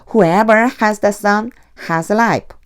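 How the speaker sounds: brief, slight pause after the sun. English lesson reading a sentence aloud, slight pause after 'the sun'. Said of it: "여기까지 한번 살짝 끊는다라고 하는 느낌으로 세 번 읽겠습니다".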